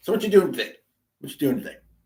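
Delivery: put-on casual, Middle Eastern accent. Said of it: "as I keep kind of trying to do his accent".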